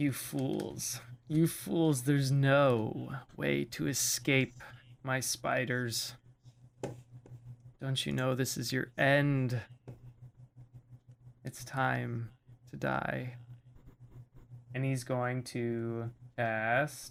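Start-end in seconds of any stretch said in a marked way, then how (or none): 0.0-13.3 menacing, taunting villain voice. Voicing an unseen villain taunting the party from somewhere in the room: villain voice taunting the party. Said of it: "you guys hear from somewhere in the room the voice emanating".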